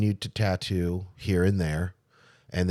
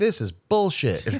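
mock very high-pitched, furious, incensed outburst; 9 semitones higher, 3 dB louder than usual. Recalling being told they were overqualified, retelling an angry outburst. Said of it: "I was so pissed. I'm like".

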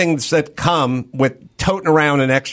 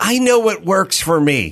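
put-on woman's voice; 4 semitones higher than usual. Quoting what people say about carbs, in a put-on chick voice. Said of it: "Sorry for doing the chick voice".

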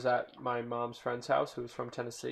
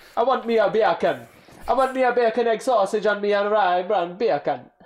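loud, high, booming put-on Jamaican accent; 9 semitones higher, 12 dB louder than usual. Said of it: "it sounds like bacon in Jamaican".

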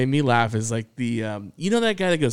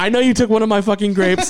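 put-on in-your-face confrontational rant, higher and louder; 8 semitones higher, 7 dB louder than usual. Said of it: "he goes right into his face".

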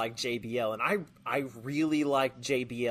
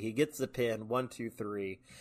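plain

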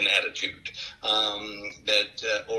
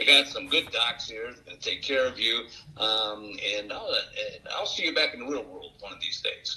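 usual speaking voice

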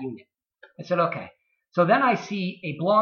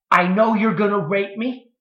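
loud, shrieking, screamed outburst; 3 semitones higher, 4 dB louder than usual. Retelling a woman's reply after he offered her help; imitating a woman screaming. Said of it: "And she screams".

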